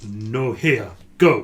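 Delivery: loud, crude, rough, broken Common speech. Voicing the chieftain questioning the party, speaking very rough Common. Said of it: "says in a very rough common".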